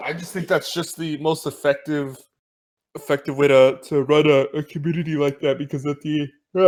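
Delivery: words stretched out by a yawn. On a podcast, the speaker carries on answering: yawning while talking. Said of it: "let me just stop yawning".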